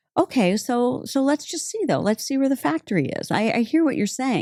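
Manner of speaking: high, bright, hopeful, coaxing tone.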